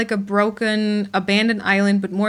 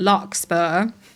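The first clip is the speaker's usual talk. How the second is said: "larkspur" pronounced with British accent; 2 semitones lower than usual. Saying a planned name, with a British accent on 'Larkspur'. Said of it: "which I have to say with a British accent".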